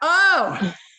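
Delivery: high, loud, playful, delighted delivery.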